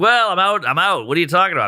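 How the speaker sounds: put-on clueless, feigned-innocent, playing-dumb tone. Retelling his phone call with his mom, retelling playing dumb. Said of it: "I'm trying to play dumb".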